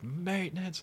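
high, yelled call.

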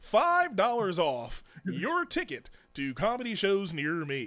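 put-on announcer voice, read like announcer. Plugging a promo code for comedy show tickets, in an announcer voice. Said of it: "I'll do it in my announcer voice".

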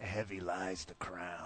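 very slow actor voice, every word drawn out. Quoting a line about the king in the front row: Jack Nicholson impression. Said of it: "'cause that's Jack Nicholson from".

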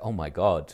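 muttered under the breath. Retelling a reaction to a shocking film moment: imitating own muttering under breath. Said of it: "muttered under my breath, like".

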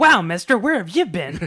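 very loud, high character-actor soda-jerk holler. Retelling a scene where the soda jerk greets a customer: imitating a character-actor soda jerk. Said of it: "the characteriest character actor as the soda jerk".

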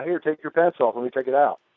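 ordinary talk

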